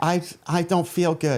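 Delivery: slow, dull depressed voice. Mocking a public figure sitting slumped in the passenger seat: imitating Fauci in a depressive stupor. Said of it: "such a depressive stupor".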